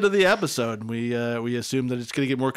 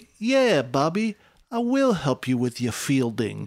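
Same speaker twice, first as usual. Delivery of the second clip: mock sleazy, suggestive, come-on delivery. Retelling how a boy named Bobby calls Samantha, mock-sleazy Samantha voice. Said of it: "Samantha's real sleazy-like is like".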